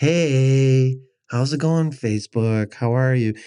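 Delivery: lazy, slow, stalling delivery with "hey" drawn out. Retelling how life coach videos all start: imitating a boring life coach video intro. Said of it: "and they do this".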